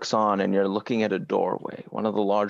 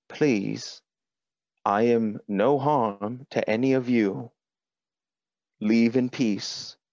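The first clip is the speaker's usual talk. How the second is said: gentle, mild, peaceable robot voice. An android in a beam of light addresses the group, speaking quietly. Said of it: "quietly says".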